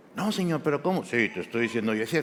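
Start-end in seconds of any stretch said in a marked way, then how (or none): 1.1-2.1 announcer voice, much lower, quieter. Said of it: "poniéndole voz de locutor a Dios".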